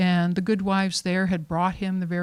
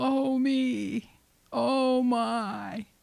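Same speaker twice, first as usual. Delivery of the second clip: thin, high, drawn-out, mournful ghost moan; 5 semitones higher, 4 dB quieter than usual. Narrating a story, voicing the ghost going from room to room: thin, sad ghost voice. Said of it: "a thin, sad voice".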